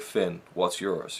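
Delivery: put-on loose, rough American accent. Quoting a trailer line by Finn: Finn's American accent. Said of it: "in a kind of an American accent".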